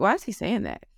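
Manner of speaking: ordinary delivery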